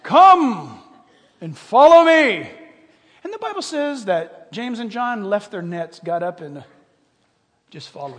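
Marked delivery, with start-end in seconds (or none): 0.1-2.5 over-the-top, very loud, very slow, drawn-out, swooping. Speaker retelling Jesus calling his followers, in an exaggerated Jesus voice. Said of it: "I'm trying to exaggerate right now".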